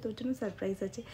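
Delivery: ordinary delivery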